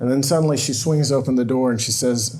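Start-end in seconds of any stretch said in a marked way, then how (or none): none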